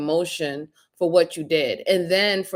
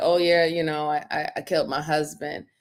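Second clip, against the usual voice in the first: put-on flat, emotionless, unfeeling tone; 3 dB quieter than usual. Retelling what the sister reportedly said: imitating an emotionless confession. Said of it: "with no real feeling and emotion".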